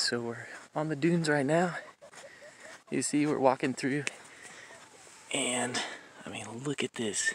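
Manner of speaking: soft, hushed whisper. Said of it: "the reason why I'm whispering".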